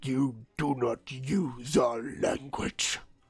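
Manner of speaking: snarling creature voice, snarled. Voicing a creature in the game, in a snarling creature voice. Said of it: "it snarls".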